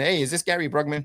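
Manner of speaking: tiny, squeaky little voice. Retelling a phone call from a Houston number, quoting Ed Hendy's squeaky little voice. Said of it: "a squeaky little voice in there".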